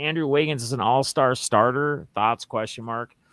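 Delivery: normal talking voice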